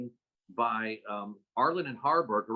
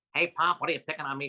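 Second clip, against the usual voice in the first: put-on high-pitched, nasal teen voice with New York accent; 4 semitones higher than usual. Demonstrating a stage role that starts as a fifteen-year-old: high-pitched teen Groucho voice. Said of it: "a 15-year-old Groucho, high-pitched voice".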